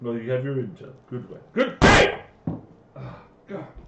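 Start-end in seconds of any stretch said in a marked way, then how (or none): 1.5-2.2 high-pitched, loud yelling. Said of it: "You're still slamming and yelling".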